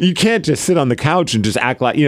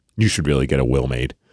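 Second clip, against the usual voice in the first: play-acted, disappointed, let-down tone; 12 semitones lower, 4 dB quieter than usual. Retelling a clinic visit where she urged getting a will: imitating a disappointed remark.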